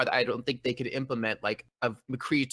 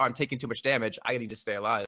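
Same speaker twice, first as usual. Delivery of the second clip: ordinary talk, nothing marked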